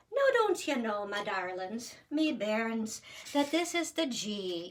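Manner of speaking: put-on Irish brogue. Teaching note fingerings to listeners after switching to an irish accent. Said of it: "so let's switch to Irish".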